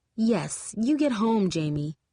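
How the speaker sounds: slow, falsely sweet, honeyed, sugary tone. Reading a story aloud, a character sends someone home: fake sugary tone. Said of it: "in a sugary tone as fake as cotton candy".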